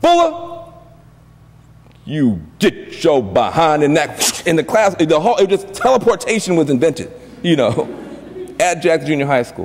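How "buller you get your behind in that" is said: stern dad voice, drawn out, deep or high. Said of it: "he had this deep voice".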